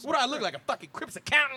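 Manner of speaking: loud, very high pitched stand-up comedian outburst. Talking about Lethal Weapon 4, the speaker does his bit: Chris Rock impression. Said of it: "when I do my Chris Rock".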